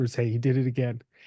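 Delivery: whispered speech. Retelling a bus ride, the girlfriend quietly reporting: imitating someone whispering. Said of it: "And then she whispers".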